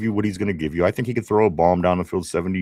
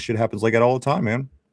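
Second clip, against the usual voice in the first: ordinary talk, nothing marked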